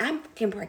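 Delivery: fed-up, agitated outburst, blurted out. Retelling snapping at someone who kept asking: imitating an agitated outburst. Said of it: "To the point I got agitated".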